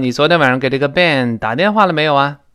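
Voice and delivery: ordinary talk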